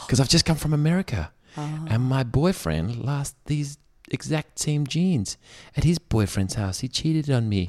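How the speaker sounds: put-on American accent. Asked why, a customer explains about the jeans in an American accent. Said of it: "why have you got an American accent?".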